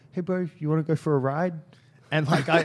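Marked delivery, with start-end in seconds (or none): 0.1-1.5 put-on, loud, pitched-up New Zealand accent. Retelling what a man said when asked for directions, kiwi accent. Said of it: "I don't know why he's got a Kiwi accent".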